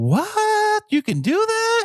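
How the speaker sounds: very high, mock shocked, incredulous.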